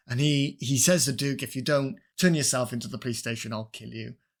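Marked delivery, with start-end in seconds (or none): none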